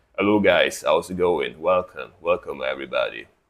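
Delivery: deep, sleepy, fresh-out-of-bed voice. Streamer greeting viewers after just waking up, in a sleep voice. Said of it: "do you enjoy my sleep voice?".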